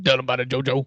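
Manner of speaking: put-on coach voice with a Louisiana accent. Podcast hosts wrapping up their South Louisiana episode; Ed Orgeron impersonation. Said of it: "That was my Ed Ogeron impersonation".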